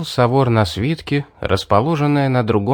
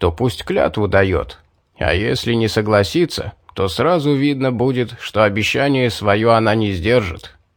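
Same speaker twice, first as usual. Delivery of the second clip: plain reading voice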